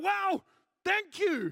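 grudging, resentful tone. Retelling a driver who could not drop his angry attitude; mock-grudging angry thanks. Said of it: "he couldn't change his attitude".

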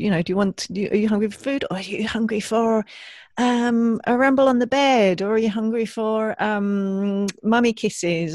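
high, loud, bouncy playful voice.

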